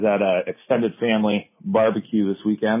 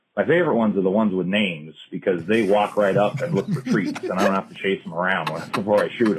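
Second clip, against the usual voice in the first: ordinary delivery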